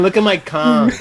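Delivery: plain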